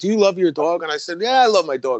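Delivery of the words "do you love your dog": play-acted, furious, shrieking scream. Retelling a confrontation with an upset woman, imitating her screaming. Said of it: "she's screaming".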